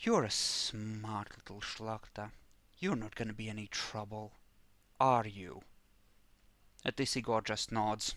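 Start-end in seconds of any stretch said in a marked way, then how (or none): 0.0-5.6 hushed, very quiet, close-range threatening tone. Voicing a character threatening a prisoner face to face: saying very quietly. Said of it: "says very quietly".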